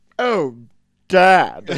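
mock smarm spread on thick, oily and smarmy. Describing the boss's son from the movie: imitating a smarmy son. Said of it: "trying so hard to just spread extra smarm".

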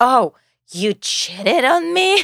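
put-on theatrical scream. Describing a couple's fight, imitating him theatrically screaming. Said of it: "really theatrically screaming".

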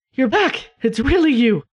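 overwhelmed, desperate, relieved. Voicing a weak man greeting a returned friend: desperate, relieved greeting. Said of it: "the hug is both desperate and relieved".

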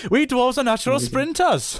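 put-on Welsh accent, pitched very high. Joking about dwarves, speaking as a dwarf in a Welsh accent. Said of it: "how funny would it be if all the dwarves were Welsh?".

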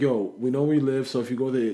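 plain

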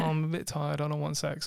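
ordinary talk

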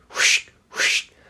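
whispered whooshing noise like a brush on leaves. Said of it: "the noise it was making was like this".

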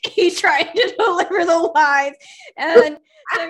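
loud, hard laughter through tears.

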